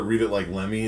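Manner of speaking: normal talking voice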